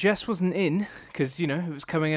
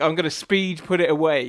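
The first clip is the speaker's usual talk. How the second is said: usual speaking voice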